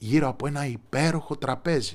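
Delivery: ordinary delivery, nothing marked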